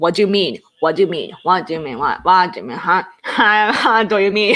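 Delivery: fast, choppy, broken-up run of repeated words. Showing how saying the English phrase fast sounds: fast, broken delivery. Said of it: "really say fast, like, ... in a kind of broken way".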